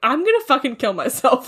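plain

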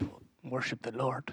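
very quiet, mumbled, botched character voice. Retelling a baptism scene from a movie, in a Nacho Libre impression. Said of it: "That was a less good impression".

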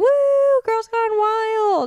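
put-on high, slow, excited child-like cheering woo. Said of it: "I'm like".

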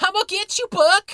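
very high-pitched, very loud hillbilly holler. Explaining an episode's line to viewers, in a Roberto the Robot redneck voice. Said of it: "him just being a redneck going".

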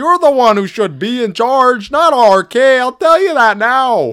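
put-on Minnesota accent. Doing the My Pillow guy in a Minnesota accent for Squeezer: Mike Lindell Minnesota accent. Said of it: "My Minnesota accent's pretty good".

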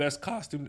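voice breaks, cracking mid-word. Reading out award winners, the speaker's voice cracks mid-word, voice cracking. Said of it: "Voice crack".

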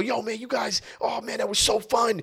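mock, very high-pitched, giddy, gushing, drunken raving. Retelling a drunk fan praising the performance: imitating a drunk, excited fan. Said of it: "he's drunk and he's happy and he's excited".

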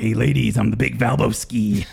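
slow, rough, creaky, flirtatious ladies'-man wrestler-style drawl. Retelling how a wrestler introduces himself to ladies: Val Venus impression. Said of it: "Is that a Val Venus impression too?".

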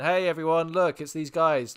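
put-on naive, innocent kid voice, loud and calling out. Retelling calling everyone over to found enemies: imitating own innocent childlike call. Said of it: "like a child, like, innocently".

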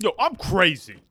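loud, uncouth character voice. Imitating Maddie's put-on voice from a sketch: Tracy Morgan type voice. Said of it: "Like a Tracy Morgan type one".

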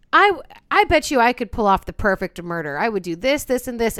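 usual speaking voice

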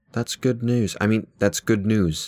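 put-on accent slipping into British. Imitating a distraught man's reaction to good news, slipping into a British accent. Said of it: "my British is coming out".

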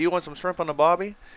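put-on Australian accent. Joking about how they might come out and talk to you, in an Australian accent. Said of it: "talk to you in an Australian accent and say".

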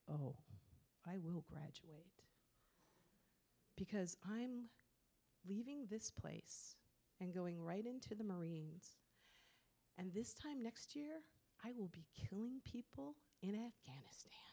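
low, dark menacing voice. Retelling a student's reply to being told he won't graduate: imitating a student's lowered, dark voice. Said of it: "he lowered his voice".

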